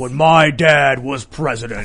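deep, slow put-on voice, unhurried. Imagine him running for president in twenty years, speaking in a deep Barron Trump voice.

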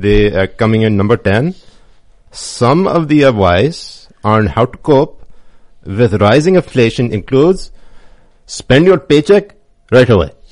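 loud, high-pitched put-on Pakistani accent. Reading a list entry aloud for the others, in a Pakistani accent. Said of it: "I usually read it in a Pakistani accent".

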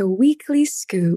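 polished media broadcast announcer voice. Asked how to say the name of the new weekly segment, in a great media voice. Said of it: "That was like great media voice there".

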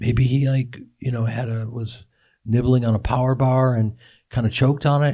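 ordinary talk

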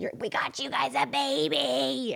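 put-on acted high, rough scream, "baby" stretched long. Retelling screaming at the dogs about a new baby: imitating own screaming. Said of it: "I keep screaming at them".

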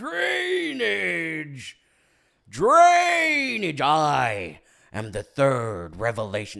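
loud, very slow, swooping and booming, "I" stretched out. Joking about allergy trouble with a Daniel Plainview impression. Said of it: "Daniel Day-Lewis impressions".

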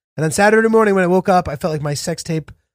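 ordinary delivery

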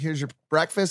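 usual speaking voice

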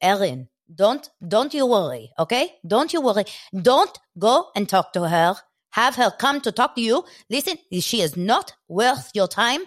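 exaggerated, laid-on Israeli accent. Act out Erin's dad reassuring his daughter, imitating a dad's Israeli accent. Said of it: "you hear her dad with this Israeli accent".

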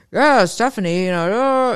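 kind of douchey guy voice. Showing how they voice John when reading their book aloud: douchey John voice. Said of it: "kind of a douchey".

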